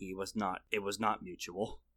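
very low, very quiet storybook narrator voice. During a tabletop game, a player narrates about a familiar, in narrator voice. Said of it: "Narrator's voice".

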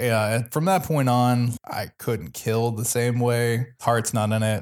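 ordinary delivery

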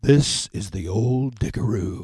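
deep announcer voiceover delivery. Retelling a man's studio outtake, in a voiceover guy character voice. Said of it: "comes out of voice man character type".

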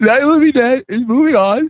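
very high, teary, close to tears. Announcing which film advances in the bracket while tearing up. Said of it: "I'm actually tearing up over Fido".

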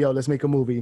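usual speaking voice

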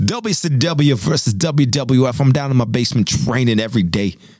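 bad, very thick Southern accent. Told you sound very Southern, show the others your bad Dusty Rhodes impression. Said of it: "That's my Dusty Rhodes".

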